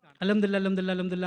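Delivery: rattled off very fast. Showing how some people say alhamdulillah repeatedly, very fast. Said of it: "ഇങ്ങനെ പറഞ്ഞ് ഇങ്ങനെ വളരെ സ്പീഡിൽ".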